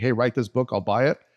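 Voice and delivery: ordinary talk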